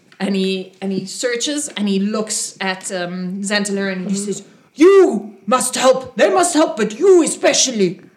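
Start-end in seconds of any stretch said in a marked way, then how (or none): 4.8-8.0 put-on orc priest voice, higher and louder. Narrating a game, the speaker voices a half-orc priest addressing one character. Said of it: "another one of the half-orc priests comes and says".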